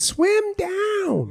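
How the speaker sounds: put-on very high-pitched voice like a tiny kid. Quoting a little Mexican kid from Finding Nemo: imitating a little Mexican kid from Finding Nemo. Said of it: "there's just a little Mexican kid".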